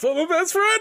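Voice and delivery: very high, loud, choked-up, weird voice. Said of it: "like that".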